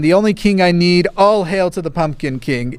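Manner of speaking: ordinary talk, nothing marked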